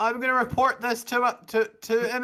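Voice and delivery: high, fast, indignant, squeaky game-character squeal.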